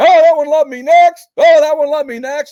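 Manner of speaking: loud, high, dismissive mock shout.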